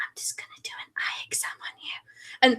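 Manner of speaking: very slow, very hushed, breathy whisper. Retelling an online video where a woman does an eye exam: imitating a whisper. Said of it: "she's just whispering the entire time".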